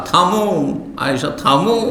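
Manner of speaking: normal talking voice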